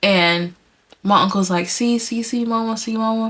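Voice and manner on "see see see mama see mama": acted tearful, frightened pleading tone, crying. Retelling a dream in which the uncle panics: imitating uncle crying and scared. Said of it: "He's, like, crying".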